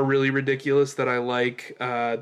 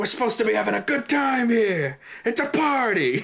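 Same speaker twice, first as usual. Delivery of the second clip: high, over-the-top shouting, coming apart; 9 semitones higher than usual. Retelling a movie scene where a character starts shouting at a party: imitating someone shouting. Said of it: "he starts shouting".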